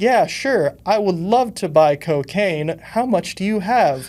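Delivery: mechanical robot-like delivery, high pitch. Retelling own stiff answer to a dealer: imitating own robotic voice. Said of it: "sounded like a robot".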